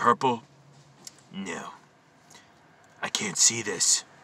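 mock-serious put-on voice. Speaker acts out a man's replies to the speaker, fake serious voice. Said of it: "Doing this fake voice".

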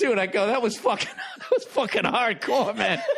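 put-on suppressed laughter. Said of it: "I'm trying not to laugh".

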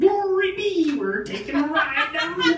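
full prospector voice, pitched very high. Imitating his GPS, which is set on a prospector voice. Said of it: "He's got it set on a prospector voice".

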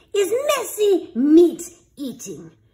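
snarling, loud, high-pitched stern voice. The headmaster announces the next lesson to the beasts, snarling. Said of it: "the headmaster snarled".

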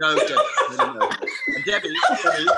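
high-pitched, loud, laughing, squealed-out protest tone.

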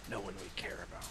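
soft, hushed, breathy, in-character whisper.

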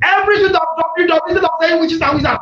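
fast, shouted delivery.

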